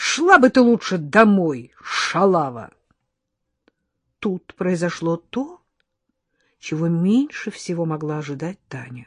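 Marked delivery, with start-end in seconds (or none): 0.0-2.7 sudden, abrupt, shouted outburst. A man suddenly raises his voice at a young woman, shouting. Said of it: "вдруг выкрикнул Дима".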